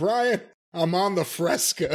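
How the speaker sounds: slow, put-on drawl dripping with disgust and disdain. Retelling a morning phone call from the other speaker: imitating a disgusted tone. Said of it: "the disgust and the disdain in my voice".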